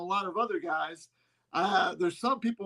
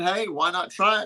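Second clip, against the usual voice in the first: plain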